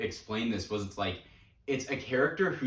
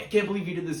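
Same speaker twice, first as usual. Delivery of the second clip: put-on yelling character voice, higher pitch; 6 semitones higher than usual. Retelling a movie scene where Hank scolds him: imitating Hank yelling. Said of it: "yelling at him".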